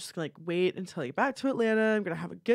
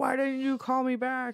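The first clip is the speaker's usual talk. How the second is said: exploding, accusing, pitched-up furious outburst; 6 semitones higher than usual. Retelling a book scene where a boyfriend blows his lid: imitating an angry outburst. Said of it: "Joshua blows his lid off".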